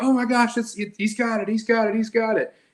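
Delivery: mimicked announcer scream. Retelling a fight commentary heard on a phone, imitating the commentator screaming. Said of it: "just start screaming like".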